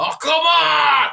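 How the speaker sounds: very high, very loud, shrill, raspy screeching yell. Describing a film role, imitating a yell: Adam Sandler yelling in raspy voice. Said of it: "Adam Sandler just yelling in that, that, you know, raspy voice".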